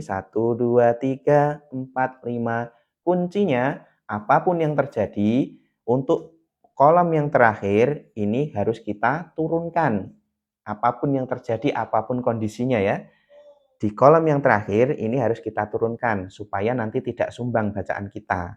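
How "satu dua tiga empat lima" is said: counting, last number lima dropped lower in pitch. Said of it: "Nah, seperti ini".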